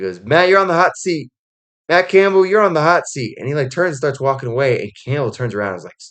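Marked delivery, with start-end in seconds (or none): 0.2-3.4 high, raised-voice jeering call. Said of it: "not, like, yelling, just, like, raising his voice".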